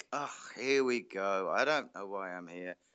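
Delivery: mock tired, soft, weary, laconic delivery. Imitating a comedy juggler's stage patter: imitating a tired, laconic delivery. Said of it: "he always had this very tired, laconic".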